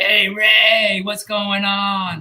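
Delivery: very slow, high, drawn-out, cracking, scratchy voice. Recalling how a man greeted him in ninety-eight, in a cracky methadone voice. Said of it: "that methadone cracky voice".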